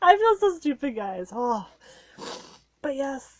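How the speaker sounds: tearful, high-pitched, speaking through tears. Speaking to viewers about a loved one, crying while talking. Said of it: "why am I crying?".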